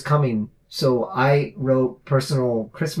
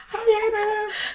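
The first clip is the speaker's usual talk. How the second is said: put-on very high, small little-boy voice. Retelling greetings with a friend's little brother, imitating Daniel's high voice. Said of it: "He had a really high voice".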